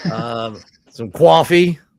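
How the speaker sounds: very loud, put-on New York accent. After being told to work on an American accent, trying a fake New York accent. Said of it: "very good New York accent there".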